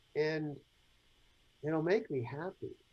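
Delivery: soft, weak, meek, sheepish, undeserving little voice. Retelling what a woman sheepishly added, imitating a weak, undeserving tone. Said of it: "In this really weakish, non deserving tone".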